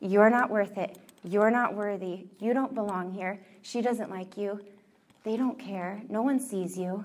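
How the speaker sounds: put-on tempting whisper. Acting out the devil's lies to people: imitating the devil whispering. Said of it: "He whispers".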